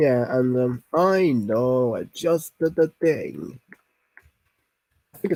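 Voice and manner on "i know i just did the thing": put-on Italian accent. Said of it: "Italian people always say "ah" in the words".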